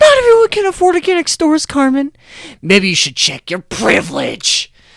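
very high, swooping, self-righteous, preachy, condescending tone. Retelling an argument, the speaker mimics Gumball's condescending, self-righteous tone. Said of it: "in this condescending, self-righteous tone".

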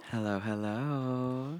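sweet, sultry, drawn out. Greeting the other speaker at the start of the episode: sweet, sultry voice. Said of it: "she's got the sweet, sultry voice".

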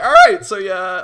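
very loud, high voice break, cracking. Starting an imitation of god speaking to deer: voice cracking. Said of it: "that was a big voice crack".

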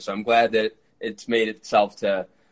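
normal talking voice

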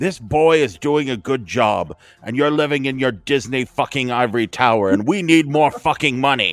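put-on Scottish brogue. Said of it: "he belts out in his Scottish brogue".

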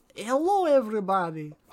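put-on thick German villain accent. Recalling a movie scene where he walks through, Gru impression, like a Putin voice. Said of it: "Sounds like my Vladimir Putin voice".

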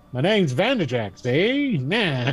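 put-on old-time mobster voice. Player taking over the character Vanderjack tries out his voice in a 1930s mobster voice. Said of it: "that's 40s, 30s mobster".

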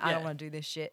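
acted flat delivery. Describing the Muppets in their off time, acting out a deadpan line. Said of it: "just the most deadpan".

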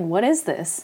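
ordinary delivery

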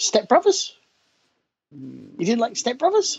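very high voice, swooping upward. Questioning the other speaker, who didn't like a film, in a very high-pitched voice. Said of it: "My voice is going very high".

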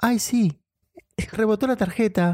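slightly mannish woman's voice. Retelling an argument with Cecilia; imitating Cecilia's voice. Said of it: "masculina la voz de Cecilia".

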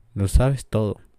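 plain

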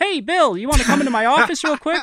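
high, very loud boss voice. Retelling how a man called him into his office: imitating the guy who called him. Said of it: "that's my impression of him".

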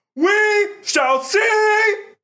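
very loud, very high, all-out yell. Retelling a ritual where the second guy shouts: imitating a super loud shout. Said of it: "The second guy would shout super loud".

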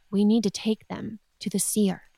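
hushed, quiet, voiced confiding tone, not quite whisper. Narrator voicing the queen turning back to the king, in a lower, hushed voice. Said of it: "she says in a lower whisper, but not a whisper, but like a lower voice".

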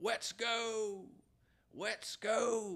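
very high-pitched, very slow, drawn-out screaming. Retelling how a guy outside a club kept trying to fight: imitating a guy screaming. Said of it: "he kept screaming".

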